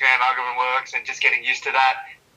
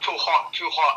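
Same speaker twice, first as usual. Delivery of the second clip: put-on Chinese accent, pitched higher; 3 semitones higher, 3 dB quieter than usual. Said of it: "in a Chinese accent".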